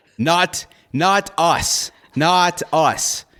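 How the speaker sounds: high-pitched yell, rushed. A character, asked who did it, answers the group, yelling. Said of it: "why are you yelling?".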